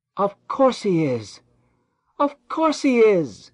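choked joyful shout, very high and very loud. As his new-found brother reveals himself, a man is shouting, choking with joy. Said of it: "shouted Benjamin, almost choking with joy".

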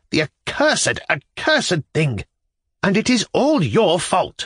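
frantic, frenzied, high-pitched outburst. A woman who has just lost at the gaming table rounds on the narrator, in a frenzy. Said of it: "rounding upon me in a frenzy".

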